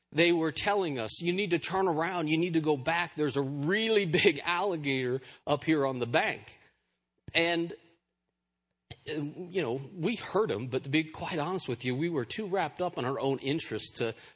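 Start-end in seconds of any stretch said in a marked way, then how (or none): none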